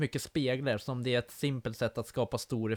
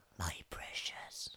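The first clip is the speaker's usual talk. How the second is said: hissing, hissed-out whispered voice; 8 semitones lower, 14 dB quieter than usual. Co-hosts try the phrase after one asks for it: Gollum voice. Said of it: "Kan du säga My Precious med den där rösten?".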